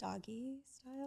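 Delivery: very quiet, barely audible, shrinking voice. Asked her favorite sexual position, answering in her most quiet voice. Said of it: "in her most quiet voice".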